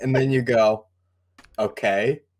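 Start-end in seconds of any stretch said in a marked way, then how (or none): 1.6-2.2 flat, expressionless, deadpan delivery. Showing how to answer a player who wants a long rest: deadpan. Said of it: "stare at them deadpan".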